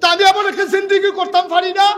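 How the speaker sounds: high, loud, fiery preaching shout.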